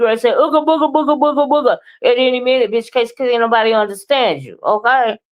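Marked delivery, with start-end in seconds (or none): 0.3-1.7 mock hyper, erratic gibberish ranting, higher. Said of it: "It be sounding like you".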